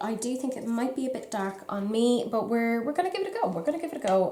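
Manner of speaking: hurried, fast, nervous, repeated chatter. Starting a makeup shade demo for viewers, speaking fast and nervous. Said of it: "I've said that very fast uh, and repetitively because I am genuinely nervous".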